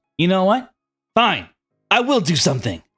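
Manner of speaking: high ghost cat voice. Voicing a ghost cat who grudgingly agrees to help: voicing Casper the ghost cat. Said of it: "he goes".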